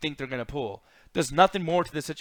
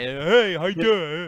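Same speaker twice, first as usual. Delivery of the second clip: slow, stock, generic American dub voice; 2 semitones higher, 4 dB louder than usual. Imitating how voice actors sound in the american dub: imitating an american dub voice actor. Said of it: "voice actors sound similar too in American way".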